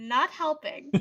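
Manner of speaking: loud, flat delivery. Looking at Son during the game, deadpan. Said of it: "kind of deadpan".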